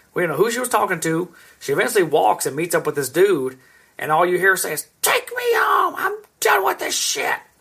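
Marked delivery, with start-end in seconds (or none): 5.0-7.4 mock very high-pitched yelling cry, way up high. Retelling what a woman said to a man: imitating a woman yelling. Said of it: "She's yelling at this fucking dude".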